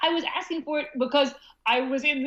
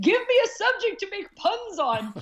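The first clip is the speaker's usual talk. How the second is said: put-on half-hearted, held-in, pitched-up mild scream; 6 semitones higher than usual. Recalling waking up from anesthesia after surgery, retelling a scream. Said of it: "I screamed".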